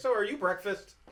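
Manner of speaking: loud projected voice. Speaking to a tree in character so everyone around hears: said loudly for all to hear. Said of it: "loudly enough that everyone around can hear it".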